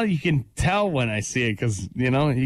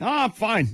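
upset, pitched-up, clearly-not-fine tone; 8 semitones higher than usual. Imitating someone who claims to be fine: imitating someone clearly upset saying fine. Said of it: "judging by your tone, you clearly are not fine".

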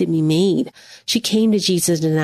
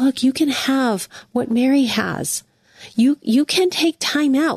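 gentle, caring, tender, loving, pitched-up encouraging tone; 5 semitones higher than usual. Reading a passage the way they hear it spoken to them: loving voice. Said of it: "I read this in a loving voice".

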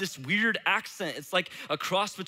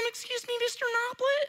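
put-on very high, slow fifth-grader kid voice. Recalling a student coming up to them while substitute teaching: imitating a fifth grader. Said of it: "that's like my best imitation of a fifth grader".

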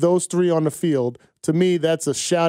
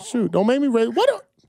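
pitch rising higher, getting faster; 6 semitones higher than usual. Teased by another speaker, he answers back, voice going up high. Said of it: "You hear my voice go up like that?".

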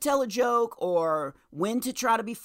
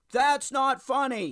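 mild put-on shout, toned down; 4 semitones higher than usual. Restarting a story for the group, retelling dad's shout. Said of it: "my dad shouting".

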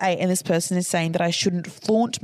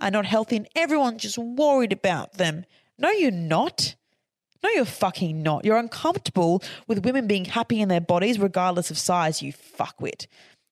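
furious, angry, escalating rant. Speaker recounting an argument to listeners, getting a bit angry. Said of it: "Sorry, I'm getting a bit angry".

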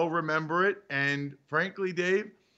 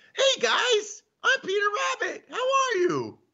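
pitch pushed way up and swung widely. Showing how to do different story voices as Peter Rabbit enters, in Peter Rabbit voice. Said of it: "They have to have different voices".

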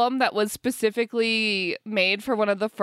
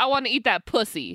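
ordinary talk, nothing marked

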